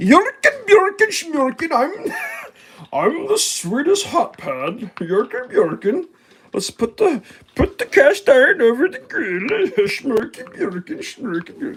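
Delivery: goofy, very high, swooping puppet chef voice. While cooking, gives a chef hot pad its own puppet voice. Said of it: "what's the sound of a chef hot pad sound like?".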